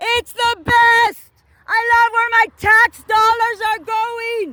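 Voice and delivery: put-on furious yelling. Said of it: "I start yelling".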